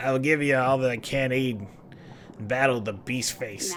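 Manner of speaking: talking like a pirate. Voicing a character mid-scene, in a pirate voice. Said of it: "I'm talking like a pirate".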